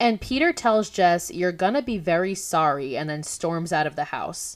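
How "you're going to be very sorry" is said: plain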